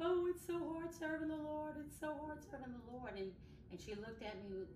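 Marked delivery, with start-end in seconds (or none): 0.0-3.1 acted-out sobbing, very high and loud, lamenting. Retelling her answer when a woman asked about her walk with the Lord, retelling own crying. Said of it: "I was busted out crying".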